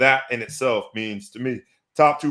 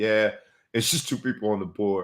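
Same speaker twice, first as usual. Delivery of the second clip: put-on deadpan, flat voice; 3 dB quieter than usual. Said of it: "he said it deadpan with a straight face".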